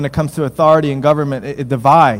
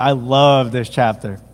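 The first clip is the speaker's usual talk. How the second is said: dry, ironic, tongue-in-cheek sarcastic tone; 3 semitones lower than usual. Introducing a scripture chapter on submitting to government: sarcastic. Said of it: "I say this sarcastically".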